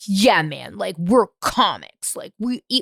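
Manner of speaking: strange, weird bro comedian voice. Mocking a cringy style heard in the comedy space, in a weird comic voice. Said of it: "I'm like doing this weird voice".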